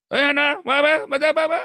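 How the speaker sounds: mock, very high, loud shouted call.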